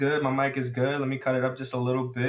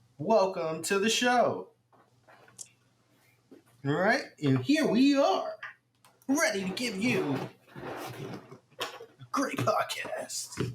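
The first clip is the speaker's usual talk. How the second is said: put-on high, swooping robotic animatronic mascot voice; 8 semitones higher than usual. Opening the podcast with a welcome: Chuck E. Cheese animatronic voice. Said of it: "you sound like a Chuck E".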